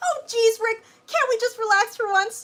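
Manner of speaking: very high, loud cartoon voice, pitch pushed out. Performing a skit of impressions, Morty voice.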